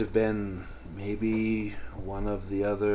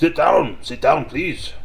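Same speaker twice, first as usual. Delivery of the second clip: loud, high talking with a full mouth; 6 semitones higher, 8 dB louder than usual. Voicing a man eating spaghetti at the table, talking with mouth full. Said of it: "he's got a mouthful of spaghetti".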